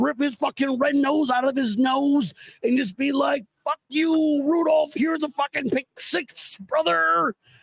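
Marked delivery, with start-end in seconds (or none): 3.6-7.3 put-on pro wrestler voice, delivered like a ring promo. Joking about punching Rudolph, speaker does a Macho Man Randy Savage voice. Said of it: "That's a lot of fucking words to do that fucking voice".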